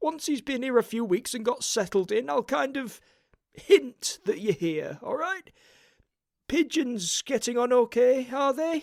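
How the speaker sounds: jittery, nervous, very high, wheedling, placating voice. Narrator reading Grote's words to Mister Winton: nervous Grote voice. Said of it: "he said. / said [name] nervously".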